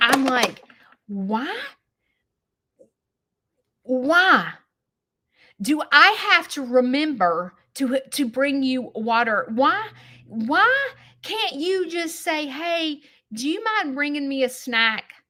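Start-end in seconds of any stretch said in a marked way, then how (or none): 1.1-15.0 put-on angry ranting voice. Retelling a complaint about having to know a husband needs help: imitating own angry words. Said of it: "I get so mad".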